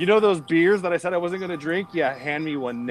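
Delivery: ordinary delivery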